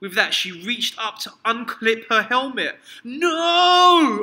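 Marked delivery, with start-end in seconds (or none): 3.0-4.2 very loud, high, shrill, stretched-out shout. The narrator stops their mother from unclipping her spacesuit helmet, yelling. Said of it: "I yelled".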